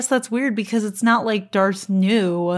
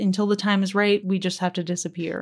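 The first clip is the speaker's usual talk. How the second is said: plain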